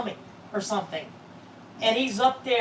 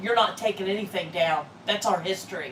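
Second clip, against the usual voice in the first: usual speaking voice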